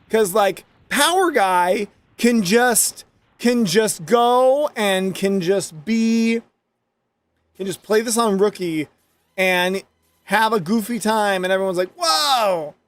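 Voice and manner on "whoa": whoa held out long, stretched way out. Mocking how another player is praised, doing a Power Guy impression. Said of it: "That's my Power Guy impersonation".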